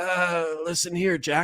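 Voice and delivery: weak, frail, hoarse, croaky rasping voice. Speaker imitating how he sounded in the George Stephanopoulos interview, frail, hoarse, croaky voice. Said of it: "that frail, hoarse, croaky voice".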